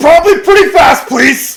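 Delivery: very high, very loud, effortful, struggling cry. Voicing a character holding an ancient dragon's mouth open with arms and legs: straining, struggling voice. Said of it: "He's like struggling to hold this mouth".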